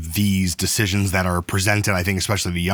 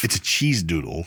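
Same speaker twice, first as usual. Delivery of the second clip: scornful, disdainful, dismissive tone; 2 semitones lower, 3 dB quieter than usual. Looking at the snack from the snack test, said with disdain. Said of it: "Don't say that with so much disdain".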